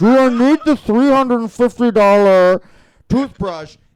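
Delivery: very loud, mumbled, muffled as through gauze. Retelling asking a question in the dentist chair, mock talking with gauze in mouth. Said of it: "with gauze in my mouth going like".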